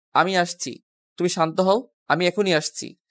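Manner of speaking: ordinary talk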